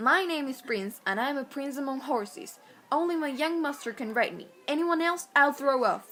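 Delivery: talking horse character voice. Reading the horse's lines from a childhood book: voice of Prince the horse. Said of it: "use his voice!".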